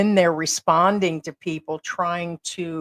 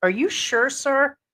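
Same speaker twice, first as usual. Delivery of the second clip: high, put-on girlish voice; 7 semitones higher than usual. Retelling how a scam-baiter pretended to be a girl: imitating a put-on girl voice. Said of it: "he used the voice".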